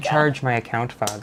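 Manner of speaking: put-on Irish accent. Friends recall a line one of them always says in an Irish accent. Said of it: "what's the one you always say when you're doing your Irish accent?".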